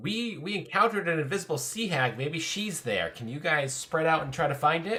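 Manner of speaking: high, carrying, loud yell. Calling out to the party down the halls: yelling down the halls. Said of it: "yell down through the halls".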